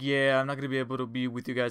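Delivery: mock lamenting, lamentful tone. Retelling the production sound teacher's excuse: imitating a lamentful tone. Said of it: "He was trying to sound all lamentful".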